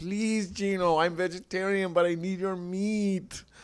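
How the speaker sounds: desperate pleading voice. Retelling what a man's partner says to him: imitating a woman begging. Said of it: "is, like, begging".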